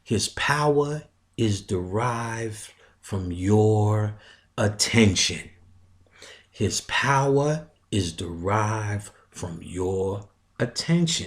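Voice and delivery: slow, level, undramatic, with drawn-out "your". Talking about the devil, stating a point slow, plain, and without dramatics. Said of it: "I want to say this slow".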